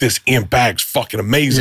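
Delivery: plain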